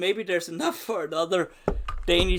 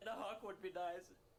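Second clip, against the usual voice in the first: very hushed, quiet voice crying through tears; 20 dB quieter than usual. Speaker playing Derry's final moments, talking to a buddy, crying actual tears. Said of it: "So these are actual tears".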